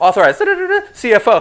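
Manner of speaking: very high, very loud, squeaky chipmunk voice. Showing what a recording played at faster speed sounds like: sped up like 1.5x playback. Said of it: "Can you imagine listening to me at one point two five or one point five?".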